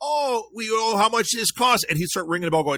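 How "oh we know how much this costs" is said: put-on big Minnesota accent, high, slow and drawn out. Retelling what a woman kept saying about a bobblehead; big minnesota accent. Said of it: "they had the big Minnesota accents".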